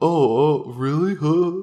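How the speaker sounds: very slow, drawn-out, high dude voice. Retelling how a line in the text was misread: voicing the dude from the text. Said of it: "I must have read it in the dude's voice".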